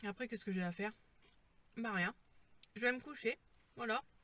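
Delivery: chewing while speaking, talking through a mouthful. Speaker eating pizza while talking: talking with mouth full. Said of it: "C'est pas bien de parler de la bouche pleine".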